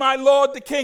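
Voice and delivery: booming, very loud, ringing yell. Retelling the story of David and Saul, retelling David's yell. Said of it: "David yells and he says".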